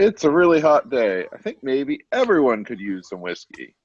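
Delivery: loud, animated voice, calling out to fill the room. After warning that trouble might be heading your way, speak up loudly for everyone. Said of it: "And then loudly".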